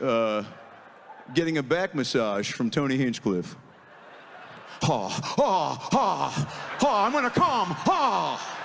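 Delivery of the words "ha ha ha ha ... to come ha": high, very slow laughing, each ha drawn out. Doing an impression of Nicolas Cage getting a back massage: Nicolas Cage impression. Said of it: "Nicolas Cage".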